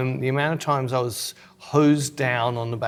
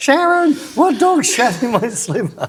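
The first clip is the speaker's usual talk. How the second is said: very high, loud, hollering yell; 11 semitones higher, 8 dB louder than usual. Retelling a funny tv show moment: imitating someone yelling. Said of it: "He's yelling out".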